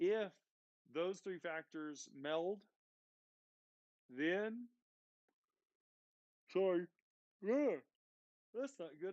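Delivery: talking through a yawn. Tired after a long ride, talking to viewers, yawning. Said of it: "I'm yawning on you guys".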